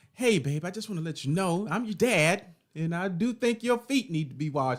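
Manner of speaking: cheerful, happy tone. Father showing how he gives his daughter a correction, joyful, happy tone. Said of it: "with like joy and happiness in my heart".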